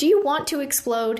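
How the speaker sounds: sharp, immediate, snapped-back delivery. Narrator reading, he answers Evelyn among arguing friends, shooting back. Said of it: "He shot back".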